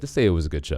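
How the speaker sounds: ordinary delivery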